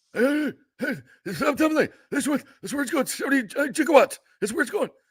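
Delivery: very high, fast, rattled-off mad scientist voice. Imitating the coach as the mad scientist from Back to the Future: Monte Kiffin impression. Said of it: "that was Monty Kiffin".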